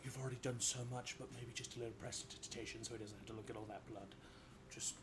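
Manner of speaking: soft, friendly, helpful-sounding half-whisper. Voicing a character who gives a player quiet advice: half-whispering in someone's ear. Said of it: "Xander just whispers in your ear".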